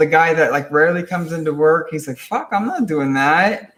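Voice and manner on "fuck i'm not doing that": tough gangster-type voice, slow and swooping. Retelling a coworker's refusal to clean the walls: imitating a gangster type. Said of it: "like this, like, gangster type".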